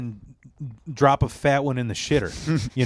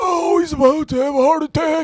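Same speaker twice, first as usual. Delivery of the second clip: very high, loud, frazzled, stressed-out cry; 5 dB louder than usual. Describing the principal from a show, imitating a stressed-out man. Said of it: "it's this guy who's like stressed out".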